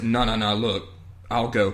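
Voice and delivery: normal talking voice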